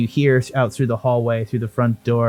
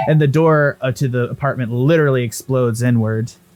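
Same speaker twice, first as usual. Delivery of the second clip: normal talking voice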